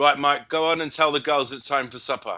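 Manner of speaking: put-on British English accent. Retelling a family dinner story, quoting him: english accent. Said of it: "he just had this lovely English accent".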